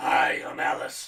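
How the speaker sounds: unexpectedly very deep, loud voice. Speaker recalls meeting a petite woman they knew: imitating Alice's very deep voice. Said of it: "had a very deep voice".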